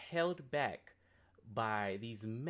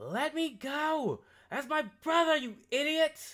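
put-on very high, very loud, shrill, bratty child scream; 8 dB louder than usual. Narrating to the players, Red is heard from a distance: loud Red voice. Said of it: "You guys hear the loud voice of Red".

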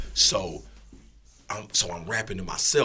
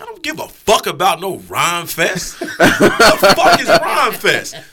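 loud, high, defiant laughing outburst. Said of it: "I'm like".

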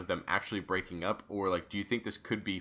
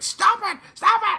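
very high, very loud, shrill, neurotic freakout shriek; 12 dB louder than usual. Describing how a character normally delivers his line, imitating a shrill freakout. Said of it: "very shrill and, like".

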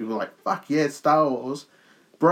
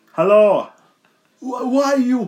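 very high, slow Portuguese accent; 11 semitones higher, 7 dB louder than usual. Attempting the wrestler in a Portuguese accent: Portuguese accent as Saul Guerrero. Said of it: "So if I try to do Portuguese with him".

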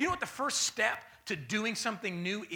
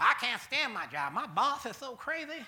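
deliberately dumb-sounding put-on voice; 3 semitones higher than usual. Speaker mocks people who complain about their jobs, in a mocking dumb voice. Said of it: "that's why i do those voices because this is dumb".

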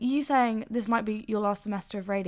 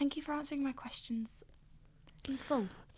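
high, soft, mean sarcastic whisper. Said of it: "that sounded really sarcastic and mean".

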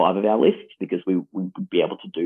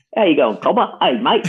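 put-on Australian accent, much higher and faster; 10 semitones higher, 5 dB louder than usual. Teasing Alex about his accent, imitating Alex's Australian accent. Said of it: "called out his abhorrent Australian accent".

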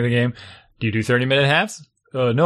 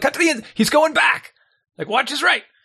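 put-on, very high, shouting coach voice; 13 semitones higher than usual. Retelling yelling at seventh and eighth graders during a game, retelling his coach-voice yelling. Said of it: "used to having like the coach voice".

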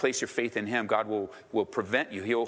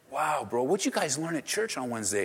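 mock awe, higher pitch; 4 semitones higher than usual. Acting out a churchgoer leaving church: imitating an awed churchgoer. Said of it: "then maybe you'll leave here so in awe".

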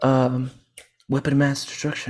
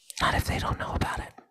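hushed, quiet whisper. Speaking into a recorded line, whispering. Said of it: "You're whispering into a recorded line".

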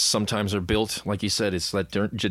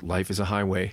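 flat, self-assured, cocky deadpan. Quoting a former boss's remark one morning, imitating a deadpan delivery. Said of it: "in this really deadpan way".

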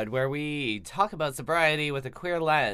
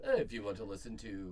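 automated, recorded phone-menu announcer voice; 6 semitones lower, 11 dB quieter than usual. Joking about an intro take, imitating Moviefone automated voice. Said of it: "like, the movie phone and be like".

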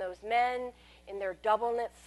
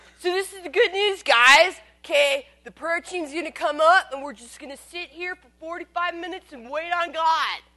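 put-on slurred speech, higher and louder; 6 semitones higher, 8 dB louder than usual. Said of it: "He slurred".

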